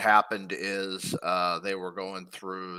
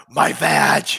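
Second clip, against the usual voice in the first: put-on wrestler scream, higher and louder; 7 semitones higher, 13 dB louder than usual. Retelling what a wrestler screamed during a match: imitating Shelly Martinez screaming. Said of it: "Shelly screamed out".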